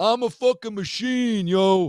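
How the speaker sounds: put-on very high, drawn-out East Coast accent. Quoting a man bursting into the room, in an East Coast wannabe-Soprano voice. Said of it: "East Coast wannabe Soprano".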